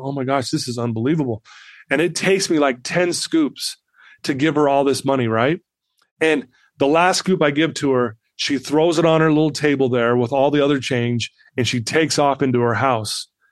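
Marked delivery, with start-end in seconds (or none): 0.0-1.4 put-on emotional voice, quieter. Retelling own reaction while giving the girl money: retelling own emotional exclamation. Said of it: "So I start getting emotional".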